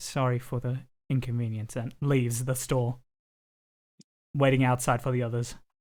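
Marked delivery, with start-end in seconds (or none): 0.0-1.8 said in a low, quiet voice. A character nods, then speaks before leaving the store, in a low voice. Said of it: "in a low voice".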